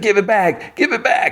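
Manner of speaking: mock very high-pitched shrieking scream. Retelling a scene where a character begs for it back: imitating a scream. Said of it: "He screams, like".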